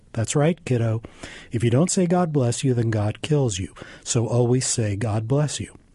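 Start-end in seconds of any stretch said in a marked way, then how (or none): none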